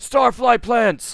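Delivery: thrilled excited shout, very high, very loud. A game narrator voices a crew member pointing something out: excited shout. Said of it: "immediately shouts out".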